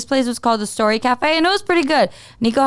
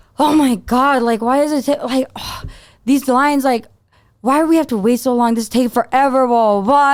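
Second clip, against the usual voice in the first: mock-annoyed complaining tone. Mimicking how the listener complained at the border, imitating someone sounding annoyed. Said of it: "you just sounded so annoyed".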